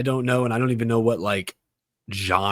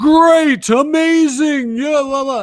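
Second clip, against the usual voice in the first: cheesy announcer, very high, loud, slow and drawn-out; 11 dB louder than usual. Speaker describes a video game's annoying narrator, doing the Sonic Colors announcer voice. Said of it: "there's a guy going".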